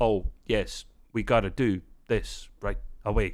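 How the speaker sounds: halting delivery with little pauses. Showing how Kirk talks: William Shatner impression with pauses. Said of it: "these little pauses".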